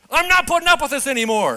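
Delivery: high, loud, fed-up, angry scolding tone.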